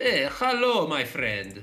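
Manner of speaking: put-on Greek accent. Quoting a character whose voice actor made him sound greek, greek accent. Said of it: "this guy was supposed to be Greek".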